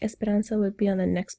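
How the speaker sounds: ordinary delivery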